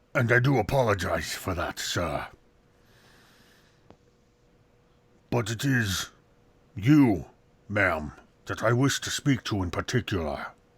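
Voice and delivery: gruff, rough female half-orc voice. The game master voices a female half-orc addressing the players, in a gruff voice. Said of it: "despite the gruff voice".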